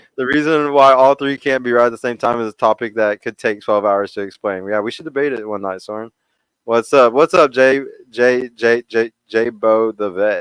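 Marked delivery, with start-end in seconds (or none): 7.1-10.4 very slow, repeated stammer on the J sound. Greeting another participant during a group discussion, stuttering. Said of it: "Sorry, I be stuttering still".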